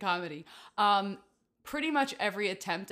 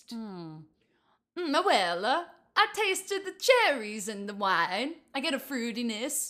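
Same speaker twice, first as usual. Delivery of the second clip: put-on Italian accent, higher pitch; 3 semitones higher than usual. Asked to taste wine and describe it in an accent, in a put-on Italian accent. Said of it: "tell me in your best accent that turns out to be Italian".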